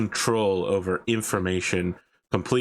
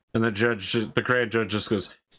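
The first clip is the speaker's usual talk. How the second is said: normal talking voice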